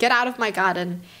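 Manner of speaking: ordinary delivery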